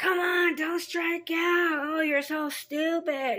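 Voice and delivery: mock drunken yelling, very high-pitched and very slow. Retelling how a drunk father yelled from the stands: imitating a drunk father yelling. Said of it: "start yelling at me".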